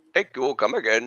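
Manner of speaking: put-on Indian English accent. Joining a group riffing on an accent they just named: Apu accent. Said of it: "It's the Apu accent".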